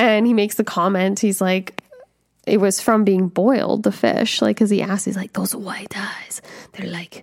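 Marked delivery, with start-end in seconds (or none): 5.3-7.2 very quiet, hushed put-on Spanish accent. Retelling a movie scene, the speaker quotes a man's question in a Spanish accent. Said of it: "I'm doing this in a Spanish accent now".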